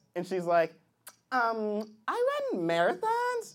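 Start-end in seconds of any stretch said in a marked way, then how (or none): 1.3-3.6 put-on sing-song young woman voice.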